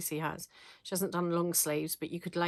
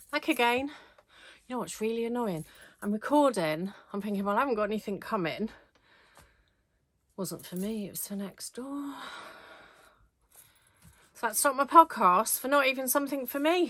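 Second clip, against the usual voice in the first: out of breath, higher and louder; 5 semitones higher, 5 dB louder than usual. Back at the recording after running up the stairs for the doorbell, out of breath. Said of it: "Now I'm all out of breath".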